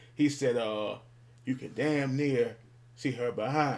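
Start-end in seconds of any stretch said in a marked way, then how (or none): none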